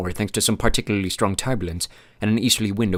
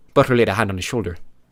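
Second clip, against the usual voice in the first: plain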